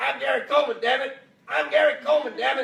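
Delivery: piercing, shrill, very loud, high screaming shriek. Telling about Gary Coleman being refused entry to a bar: imitating Gary Coleman screaming. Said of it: "he's screaming".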